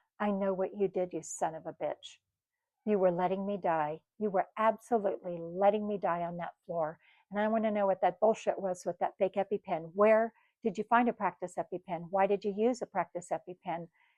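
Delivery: ordinary talk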